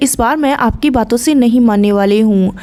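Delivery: plain reading voice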